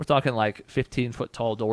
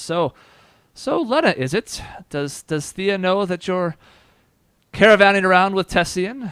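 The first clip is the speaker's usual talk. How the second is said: nearly over-loud, high-pitched character voice; 8 semitones higher, 7 dB louder than usual. A character asks Lena a question in an almost overly loud voice. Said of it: "that same almost overly loud voice".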